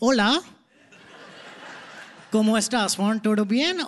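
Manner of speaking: put-on Spanish spoken with an Indian accent. Recalling going around school speaking Spanish, in an Indian accent. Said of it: "speaking Spanish in an Indian accent".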